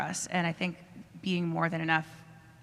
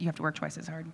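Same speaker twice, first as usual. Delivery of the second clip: ordinary talk, nothing marked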